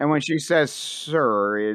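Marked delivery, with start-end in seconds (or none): 0.7-1.6 sarcastic, mocking "sir". Voicing a crew member addressing the captain: sarcastic "sir". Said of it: "it's very sarcastic".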